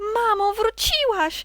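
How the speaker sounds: very high, very loud, high-pitched shout. The last mouse throws herself at the grey sock's neck: shouting. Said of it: "Krzyknęła ostatnia mysz".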